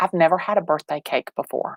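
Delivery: whispered words. Retelling what a tall eighteen-year-old whispered during a hug, retelling a whisper. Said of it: "he whispers in my ear".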